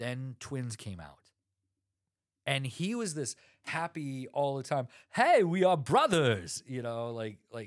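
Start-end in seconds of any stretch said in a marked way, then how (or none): 5.1-6.6 belted out loud, cheery and swinging. Retelling a movie scene, doing a terrible Arnold Schwarzenegger impression. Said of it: "that sounded like Borat".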